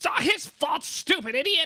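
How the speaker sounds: very high-pitched, shrill, loud, furious goblin voice. Voicing a second goblin swatting at the first: voicing an angry goblin. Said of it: "the other one's just, like, swatting at him. He's like".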